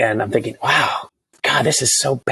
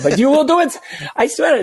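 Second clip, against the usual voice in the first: clumsy, bad French accent, very high-pitched; 13 semitones higher than usual. Retelling what the French production company told them: bad French accent. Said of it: "So that's a bad accent".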